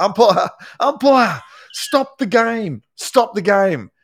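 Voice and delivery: very high, very slow, drawn-out shouted call. Retelling a coach's call across the ground after halftime: imitating Michael Voss yelling. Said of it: "Michael Voss has yelled out".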